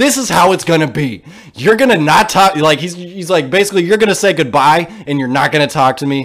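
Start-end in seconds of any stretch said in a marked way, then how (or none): 0.0-2.6 full-on screaming, snapped angry tirade. Retelling how he snapped at the other man in the car, imitating someone screaming. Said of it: "he just starts screaming at him".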